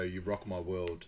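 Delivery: normal talking voice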